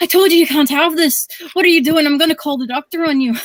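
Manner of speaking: Irish grandmother brogue. Retelling what his grandmother said to him the next morning, in an irish grandmother brogue. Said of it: "lit with the drawl with the with the with the brogue".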